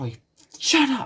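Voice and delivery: mock very high, shrill, loud furious yell. Reading a fan story aloud, a character shouts at someone to sit down: shouting angrily. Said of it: "stares directly into his eyes and shouts".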